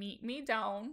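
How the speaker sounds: put-on Minnesota accent. Coaching a partner through a line phrase by phrase, in a mock Minnesota accent. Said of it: "mock Minnesota accent".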